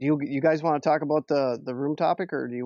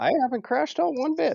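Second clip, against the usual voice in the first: voice jumping up very high-pitched; 12 semitones higher than usual. Denying the other person's claim of crashing out in an argument, high-pitched voice. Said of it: "you went a bit high pitched".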